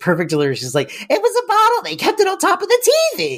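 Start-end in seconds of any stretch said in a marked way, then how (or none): 1.1-3.4 very high, defensive, mock protesting tone. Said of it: "Renee Taylor gets so defensive".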